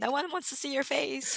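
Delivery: high-pitched ranting, scolding yell. Retelling how Randall yells at them: imitating Randall yelling. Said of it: "he's yelling at me and saying".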